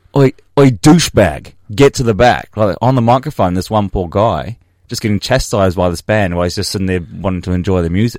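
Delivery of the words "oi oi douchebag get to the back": hostile, aggressive, loud, drawn-out barked shout. Retelling a band shouting at a guy to move back: imitating an aggressive shout.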